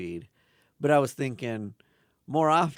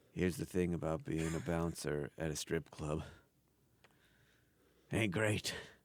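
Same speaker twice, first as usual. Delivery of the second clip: solemn, grizzled deadpan drawl, low, barely above a murmur; 5 semitones lower, 9 dB quieter than usual. Imagining how a character would deliver a joke segue, solemn, grizzled delivery. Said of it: "I imagine his delivery being like".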